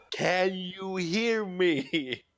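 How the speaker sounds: very slow, high, drawn-out delivery. Speaker shows how they would talk to someone, speaking very slowly. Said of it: "I start speaking to you very slowly".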